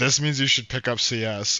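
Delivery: ordinary talk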